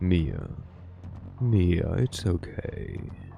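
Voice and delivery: deep, sultry, seductive delivery. Voicing a male character reassuring Mia: sultry deep voice. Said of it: "I try to give him a sultry deep voice".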